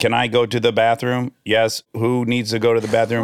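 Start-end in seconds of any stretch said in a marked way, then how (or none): none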